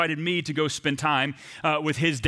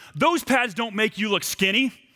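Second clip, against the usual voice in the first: mock, pitched-up, shouted delivery; 6 semitones higher than usual. Retelling a hockey quarrel with a teammate: imitating Matt shouting. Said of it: "Matt began to shout things at me".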